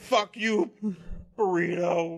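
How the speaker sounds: put-on shouting. Imitating a guy who yells at his food: imitating someone yelling at food. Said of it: "this guy yells at his other food".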